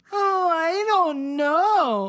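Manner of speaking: very high, slow voice, "know" drawn out. Imitating how a female character sounds in normal conversation. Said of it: "That's how I feel like she sounds".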